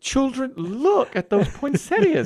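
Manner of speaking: very high-pitched, gushing motherly voice. Retelling a family trip and quoting the mother to the children, imitating mother's voice. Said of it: "I'll do an impression of my mother".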